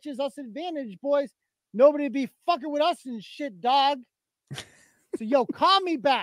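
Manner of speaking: scornful, satirical put-on send-up delivery. Playing back a satirical clip, doing a mocking impression of someone. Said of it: "So I am clearly mocking him there".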